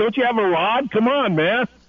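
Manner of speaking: high, urgent hollering yell. Retelling running down the beach with Joaquin: retelling a yell. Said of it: "I was yelling at him".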